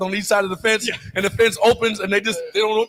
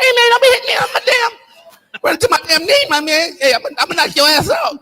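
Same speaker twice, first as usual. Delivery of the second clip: light, thin, high voice, raised; 9 semitones higher, 5 dB louder than usual. Retelling a game story, the speaker quotes D'Antoni after David Evans ran into him, in D'Antoni's light voice. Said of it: "D'Antonio with his light voice".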